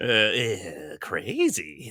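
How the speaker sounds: swooping pitch with a drawn-out "eh". Repeating the other speaker's last word as a joke: Joker impression. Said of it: "not the worst Joker I've seen".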